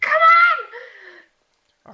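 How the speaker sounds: shrieked, very high-pitched scream. Voicing Seraphine in a fight: screaming. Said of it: "Seraphine gonna start screaming".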